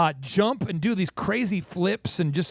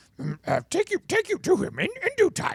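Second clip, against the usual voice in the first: squirrely little creature voice, higher; 11 semitones higher than usual. Retelling a film scene where Yoda answers Luke: Yoda voice. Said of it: "Yoda's kinda squirrely".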